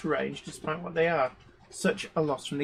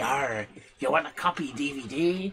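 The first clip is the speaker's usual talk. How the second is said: slow put-on pirate voice; 2 semitones lower than usual. Answering a viewer comment about a dodgy Bristol accent: put-on pirate voice. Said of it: "that's how I sound like a pirate".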